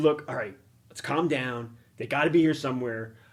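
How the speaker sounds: ordinary delivery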